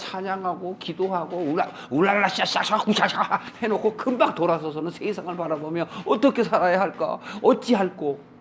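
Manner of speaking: high, mock pious then fretful voice.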